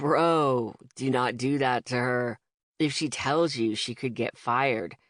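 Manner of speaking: smooth low husky voice. Reading a story aloud, a customer warns his friend: smooth low raspy voice. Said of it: "Smooth, low, raspy voice says, or sings, or tries to sound sexy".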